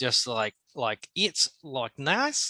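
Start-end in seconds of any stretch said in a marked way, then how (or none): 1.1-2.5 put-on Australian accent with a lilt and rising pitch at end. Showing how to get into an Australian accent: put-on Australian accent. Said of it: "uptick, like a question".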